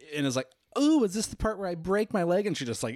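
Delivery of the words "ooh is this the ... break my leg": very high-pitched, loud, jeering, mocking taunt. Retelling a horror-movie scene, the cheerleader making fun of scary movies: imitating someone mocking. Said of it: "making fun of Scary Movies".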